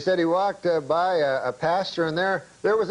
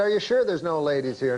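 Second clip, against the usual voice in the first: normal talking voice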